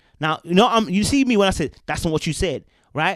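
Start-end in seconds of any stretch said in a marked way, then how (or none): none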